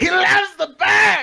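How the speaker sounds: very high, very slow, loud, drawn-out voice. After announcing a quick impression, the speaker does it: Gary impression. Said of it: "Gary is a very hard voice to do".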